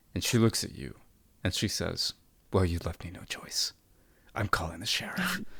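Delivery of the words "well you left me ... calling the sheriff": near-fuming, angry, threatening tone. The narrator voices Patience Head speaking to the player, fuming. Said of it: "she's almost fuming in the desert heat".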